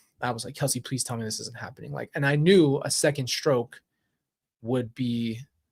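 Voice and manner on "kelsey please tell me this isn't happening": mock panicked, urgent, hushed, rushed voice. Retelling running to wake someone while fearing a second stroke, retelling pure panic. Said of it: "Like that was pure panic".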